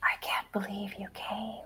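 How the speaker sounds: faint, breathy whisper, very quiet. Voicing a reply heard from the darkness: whisper. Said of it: "You hear as a whisper".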